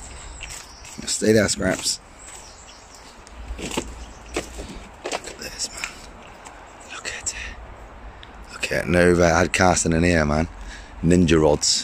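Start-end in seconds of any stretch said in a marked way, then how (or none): 3.6-7.3 very soft, slow, sneaky whisper. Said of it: "I'll show you some sneaky, sneaky stuff".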